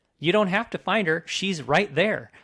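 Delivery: mock shouting, loud and high-pitched. Retelling yelling at the tv during an emotional scene: imitating own yelling at the tv. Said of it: "yelling at the T V".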